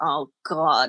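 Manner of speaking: imitated mumbling under breath. Retelling the husband's reaction to a guest at dinner: imitating muttering under breath. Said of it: "he goes under his breath".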